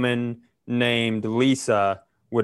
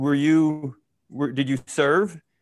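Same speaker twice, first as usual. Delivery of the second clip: put-on drunk man voice, higher; 3 semitones higher than usual. Retelling how a man turned to a woman: imitating a drunk man. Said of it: "he drunkenly turns to her and he goes".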